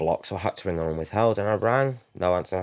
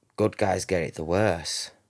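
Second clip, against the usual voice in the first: mock muttering under the breath. Speaker recounting a call, repeating what a woman muttered under her breath. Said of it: "under her breath".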